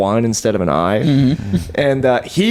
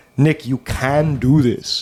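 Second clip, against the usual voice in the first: put-on Israeli-accented speech; 3 semitones higher than usual. Retelling how a boss berated him: imitating Moti's thick accent. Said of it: "his accent was so thick".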